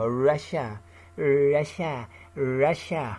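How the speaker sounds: slow, savouring, orgasmic moan. Mocking how a man keeps saying Russia, in a mock-orgasmic delivery. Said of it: "He's saying Russia like he has orgasm".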